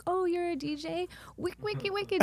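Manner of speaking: sarcastic, very high, gushing, over-eager fan voice. Mocking how fans greet a dj: sarcastically imitating an eager fan. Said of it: "you come up and you're like".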